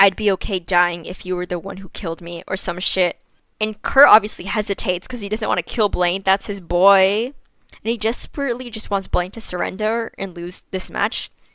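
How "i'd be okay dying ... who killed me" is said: put-on whisper. Retelling a fanfic scene where one character says this: imitating a whisper.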